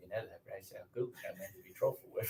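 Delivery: quiet, close whisper. Retelling whispering a film line behind someone: whispered Michael Caine impression. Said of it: "you whispering it sounded even".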